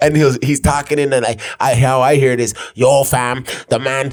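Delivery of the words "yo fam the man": put-on Toronto young man voice, pitched higher. Showing how a long message sounds in your head as you read it, imitating a Toronto guy. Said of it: "this Toronto fool is like".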